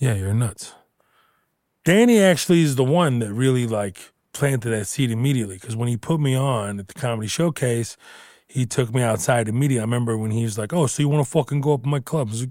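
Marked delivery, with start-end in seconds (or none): 10.7-12.3 put-on Italian accent, higher pitch. Retelling what a club owner said: imitating Italian accent. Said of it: "immediately go into Italian accent".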